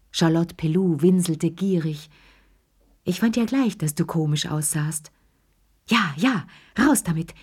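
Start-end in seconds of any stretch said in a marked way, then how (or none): 5.9-7.2 panting, gasping, slower speech. Three old women press Lea to tell her secret, gasping. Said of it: "japsten die drei Alten".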